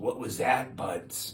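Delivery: put-on thick, laid-on Boston accent. Telling a phone story, the speaker quotes Steve hearing a smash: imitating Steve's Boston accent. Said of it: "he had a very thick Boston accent".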